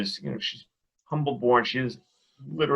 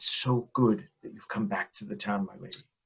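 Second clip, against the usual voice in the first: soft, hushed, discreet whispered murmur; 3 semitones lower, 7 dB quieter than usual. Speaking in character to an unwell lady, Ichtrude whispering. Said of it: "just wants to kind of whisper".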